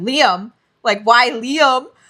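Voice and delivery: instantly jealous, suspicious tone. Retelling a character's reaction to hearing another man's name: imitating a jealous reply. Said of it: "you can tell he's immediately jealous".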